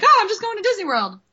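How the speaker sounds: cartoon voice, squeaked very high. Chatting about Disney World trips, voicing a made-up remark, sounding like Mickey Mouse. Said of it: "I kind of sounded like Mickey Mouse when I said that".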